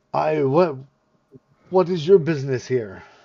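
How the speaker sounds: deep rough put-on voice. Narrating to the players, voicing the figure at the library door in a big gruff voice. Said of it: "in a big gruff voice".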